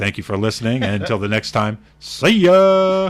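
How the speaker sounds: very loud, booming radio announcer voice, drawn-out "ya". Host signs off the show for himself and his co-hosts, best radio voice. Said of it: "in my best radio voice".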